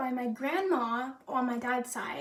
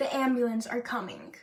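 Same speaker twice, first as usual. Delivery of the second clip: ordinary delivery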